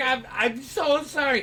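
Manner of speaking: put-on scared, slow, apologetic young teen fantasy-creature voice. Voicing a young halfling who holds up his hands: apologetic halfling teen voice. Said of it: "he's like a little halfling guy, like, young teenager".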